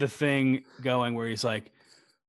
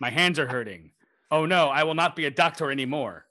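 stiff put-on American accent. Mocking an actor's forced American accent in a film. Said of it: "Benedict Cumberbatch had to do an American accent".

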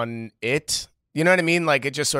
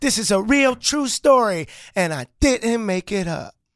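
very high, unconvincing put-on kid voice; 10 semitones higher, 4 dB louder than usual. Speaker opening the show with a story told in a kid's voice: bad kid's voice. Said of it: "You could have done a better kid's voice".

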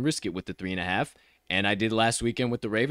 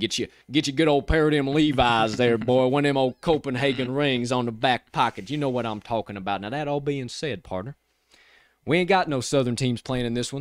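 folksy, put-on Southern accent, cowboy-style talk; 3 semitones higher than usual. Talking about Levi Stadium before the game, in a put-on Southern accent. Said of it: "I'm going to drop that accent".

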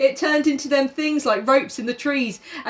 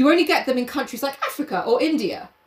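normal talking voice

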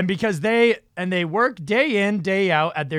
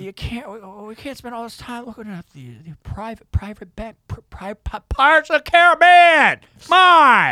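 put-on stammering politician voice, higher and louder; 4 semitones higher, 5 dB louder than usual. Retelling a comedian's Joe Biden impression. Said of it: "his Joe Biden is like".

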